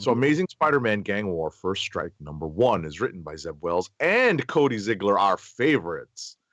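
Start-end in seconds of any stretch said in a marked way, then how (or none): 5.2-6.3 heavily sarcastic delivery. Naming a comic book's writers during a review, heavy sarcasm. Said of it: "I say that with so much sarcasm".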